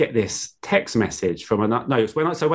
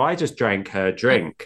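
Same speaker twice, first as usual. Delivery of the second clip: normal talking voice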